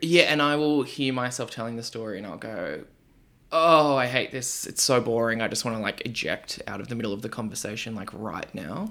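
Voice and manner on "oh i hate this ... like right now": normal talking voice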